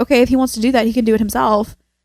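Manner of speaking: plain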